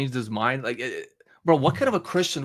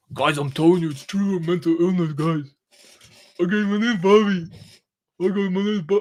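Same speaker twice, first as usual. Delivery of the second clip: put-on dim-witted, meathead gym bro voice; 4 semitones higher than usual. Mimicking the way a guy speaks, imitating a guy who sounds like a meathead. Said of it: "he just sounds like a meathead".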